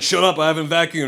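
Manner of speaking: normal talking voice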